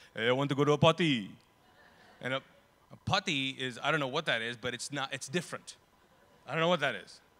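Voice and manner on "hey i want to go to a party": put-on loud, thick Arabic accent, P sound missing.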